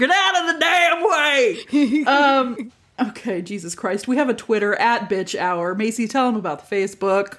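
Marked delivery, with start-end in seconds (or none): 0.0-2.7 very slow, high cowboy drawl, every word dragged out. Podcast host joking about Southern accents, doing an Arthur Morgan voice. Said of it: "I just sound like Arthur Morgan".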